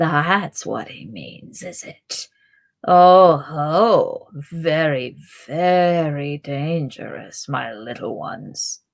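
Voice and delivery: soft, low, hushed, hissing goblin voice. Narrating a story, the goblin Grishnákh speaks to the hobbits, hissing softly. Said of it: "hissed the goblin softly".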